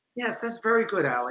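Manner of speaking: very soft, quiet, calm, cerebral intellectual tone. Contrasting two teachers by doing impressions, imitating Howard, mock-calm and intellectual. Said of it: "Very intellectual, very calm".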